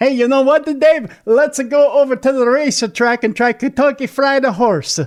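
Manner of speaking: put-on Italian accent. Joking that people who live in kentucky pick up the accent: put-on italian accent. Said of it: "They all sound like that in Kentucky".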